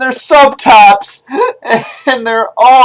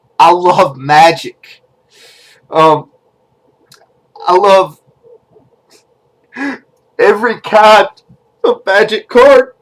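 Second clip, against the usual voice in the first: heartfelt voice full of emotion; 3 semitones lower than usual. Introducing himself and hoping for replies, getting emotional. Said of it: "I'm getting emotional".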